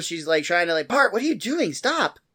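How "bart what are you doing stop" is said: high, fed-up, annoyed scolding tone. Retelling a TV scene where Lisa scolds Bart, mock-annoyed Lisa voice. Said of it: "Lisa's kind of annoyed at this".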